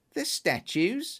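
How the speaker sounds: high, startled, incredulous outcry. Lestrade, hearing Holmes claim he knows the whole story, cries out. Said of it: "cried Lestrade".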